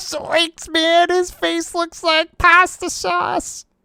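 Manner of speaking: very high, strange cartoon slacker voice. Joining a riff about a cartoon scene, in a very strange Shaggy voice. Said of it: "That was a very strange Shaggy".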